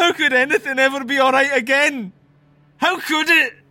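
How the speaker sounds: shouting. Told that everything will be all right, a parent yells back. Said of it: "No need to yell".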